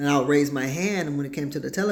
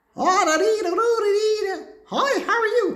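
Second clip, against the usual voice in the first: very high, slow put-on sing-song voice; 4 dB louder than usual. Imitating a relative who changes their voice around others. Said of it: "they change their voice".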